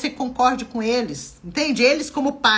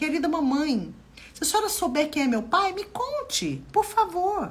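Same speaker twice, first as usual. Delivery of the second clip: gentle, courteous, humble polite tone; 4 semitones higher, 5 dB quieter than usual. Suggesting how to ask one's mother who the father is: polite asking tone. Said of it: "se você pedir com educação ... nesse tom".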